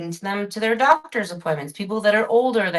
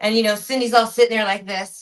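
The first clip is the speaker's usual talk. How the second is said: ordinary delivery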